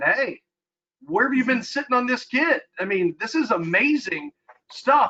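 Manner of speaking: mock, high-pitched, dripping with sarcasm. Retelling a text sent to the athletic director: retelling a sarcastic message. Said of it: "I sarcastically sent a text".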